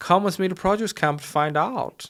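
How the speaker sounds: put-on German accent. Retelling being invited to a camp, quoting the man who asked; put-on german accent. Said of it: "I don't know what's German".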